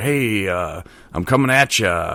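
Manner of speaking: slow, cheesy on-air radio announcer delivery. Describing how Ryan leads out interviews, imitating Ryan's best radio voice. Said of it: "his like best radio voice".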